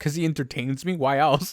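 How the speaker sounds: thick, acted, super sarcastic tone. Retelling a reply to someone who asked why: imitating a super sarcastic reply. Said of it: "I said it, like, super sarcastically".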